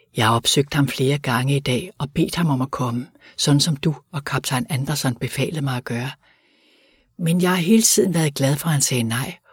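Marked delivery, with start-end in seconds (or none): none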